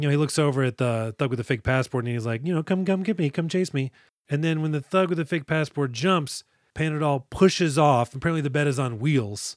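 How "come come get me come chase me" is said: playful cartoon-rabbit voice, gleeful and taunting. Retelling a movie character daring a thug to chase him: imitating a gleeful taunt. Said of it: "he's gleefully".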